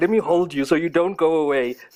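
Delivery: condescending, patronising, talking-down tone. Retelling how a family friend held him: imitating a condescending tone. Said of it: "that condescending kind of like".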